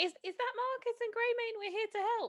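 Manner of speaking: very high, loud shouted yell. A tabletop player's character calling back to someone crying for help, yelling. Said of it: "I'm gonna literally yell back".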